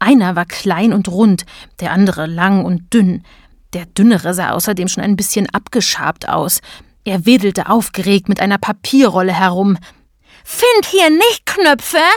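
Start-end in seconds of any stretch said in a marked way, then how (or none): 10.4-12.0 shrill, very high, bellowing roar. A narrator reads a character waving a paper roll about, roaring. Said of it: "brüllte er".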